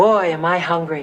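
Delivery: laid-back, offhand, real cool, casual voice. Showing a friend how to start asking someone out: real cool voice. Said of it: "say in a real cool voice".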